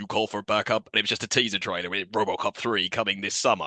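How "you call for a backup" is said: put-on robotic voice. Speaker recalls a teaser trailer where the character appears, RoboCop voice. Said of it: "RoboCop comes out and goes".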